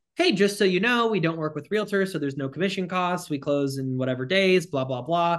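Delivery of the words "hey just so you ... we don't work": usual speaking voice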